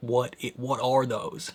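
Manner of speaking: horrified, aghast, faltering and stammering delivery. Retelling a character looking up at the stars: imitating someone horrified. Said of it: "he looks up in horror".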